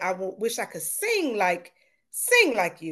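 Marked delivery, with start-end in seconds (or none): none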